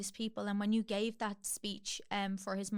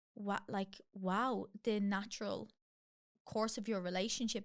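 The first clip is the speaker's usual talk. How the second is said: plain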